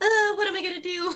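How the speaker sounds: frantic, panicked voice. Retelling own reaction to unfinished plans: retelling own panic. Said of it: "freaking out about it".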